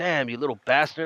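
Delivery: plain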